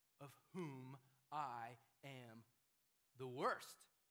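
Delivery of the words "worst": stressing worst, louder. Repeating the end of a Bible verse, stressing the word worst. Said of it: "Emphasis on that end there".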